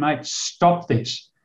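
put-on agitation. Recounting a wounded man who kept pulling off his dressings, retelling agitated words. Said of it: "I'm getting a bit agitated with him".

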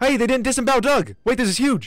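loud, high, thrilled, carried-away excited outburst. Speaker reacting while playing, excited and loud. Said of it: "Sorry if I'm getting too loud".

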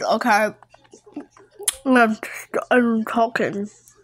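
words spoken through a mouthful of food. Filming while eating, talking with a mouth full of food. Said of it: "I have a mouth full of food".

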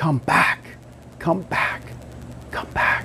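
whispered, barely voiced, very quiet. Retelling how Jesus sends the Spirit into the world: Jesus whispering. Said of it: "he whispers".

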